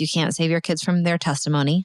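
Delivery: plain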